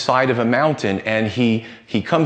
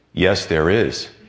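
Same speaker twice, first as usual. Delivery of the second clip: mock calm, commanding, powerful voice of authority; 6 semitones lower than usual. Telling a joke, voicing the answer to a dangling man in a put-on calm, powerful voice. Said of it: "a calm, powerful voice says".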